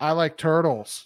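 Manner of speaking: toneless, flat, deadpan monotone. Retelling someone's famous answer to a news reporter's question, in a flat monotone. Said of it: "that monotone".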